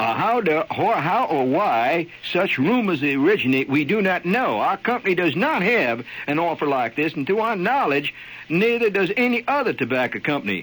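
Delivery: put-on North Carolina accent. Speaker reads out a quote from a man in north carolina in a north carolina accent. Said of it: "I'll have to use my North Carolina accent".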